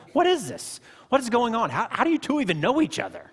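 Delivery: very high-pitched, very loud shout. [name] breaking in between the musician and Gabe, shouting. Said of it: "[name] shouted".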